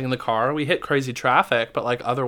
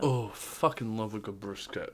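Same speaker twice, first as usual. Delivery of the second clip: sudden drop to very low, very deep, soft, hushed voice; 4 semitones lower, 13 dB quieter than usual. Chatting about huge sandwiches, the speaker's voice suddenly drops very low. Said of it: "your voice dropped like 3 octaves".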